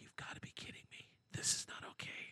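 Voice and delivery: breathy, hushed, very quiet whisper. Retelling what a woman whispered to her sister: imitating someone whispering. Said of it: "She whispers to the sister".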